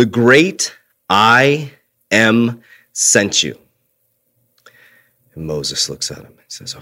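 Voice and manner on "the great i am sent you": put-on authoritative, commanding voice. Retelling God's answer to Moses: imitating God speaking with authority. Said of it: "with authority".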